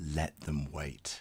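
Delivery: barely audible, very quiet whispered aside. Retelling what the co-host said before going live: imitating someone whispering. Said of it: "he whispered to me".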